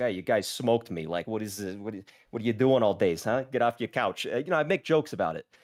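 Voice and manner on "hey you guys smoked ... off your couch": jokey put-on Boston character accent. Streamer recalls joking with viewers who beat them, Boston accent character. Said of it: "I had a Boston accent character".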